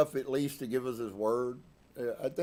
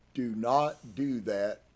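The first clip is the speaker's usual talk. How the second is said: emphatic, slow, pressed stress on do not. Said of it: "and I say emphatically".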